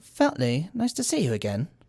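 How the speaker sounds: put-on British-accented voice. Recapping a show scene, a character greets Feltney in Blake Gripley's British accent. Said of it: "I don't know why he has a British accent".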